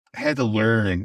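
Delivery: ordinary delivery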